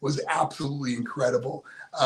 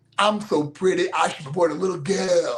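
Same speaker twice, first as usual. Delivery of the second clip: mock-flamboyant, louder, boastful delivery; 3 semitones higher, 5 dB louder than usual. Recalling Dusty working with him at the arena, imitating Dusty, flamboyant and smooth. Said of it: "he was just so flamboyant and smooth".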